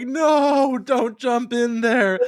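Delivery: very high, upset, drawn-out pleading tone. Describing a cartoon scene where Steven tries to stop Lars jumping in, imitating Steven's upset plea. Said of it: "he sounds so upset".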